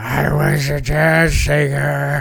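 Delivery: fake rough, raspy voice. Joking about what a character would sound like, imitating Beta's raspy voice. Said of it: "that raspy voice".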